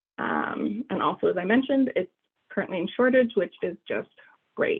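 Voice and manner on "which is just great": heavy, dry, very sarcastic tone. Reporting that a treatment is currently in shortage, sarcastic. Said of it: "that's a very sarcastic great".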